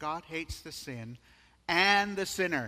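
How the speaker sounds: heavy emphasis on the word "and". Repeating a statement about God hating sin, stress on 'and'. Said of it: "Now notice my emphasis on the word "and."".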